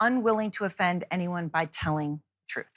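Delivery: plain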